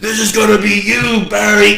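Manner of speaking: gruff, high, menacing, threatening wrestler's growl. Retell Road Warrior Animal addressing Barry Windham during a cage match, in a gruff Hawk voice. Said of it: "in this hawk gruff voice".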